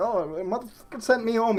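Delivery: put-on thick, laid-on, heavy Greek accent. Imitating the man who was sent home, in a heavy Greek accent. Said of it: "heavy Greek accent".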